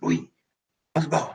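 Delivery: whispered, rushed words in a quick, high whisper. A role-play player speaking as their character to louis, whispering. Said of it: "je dis en chuchotant".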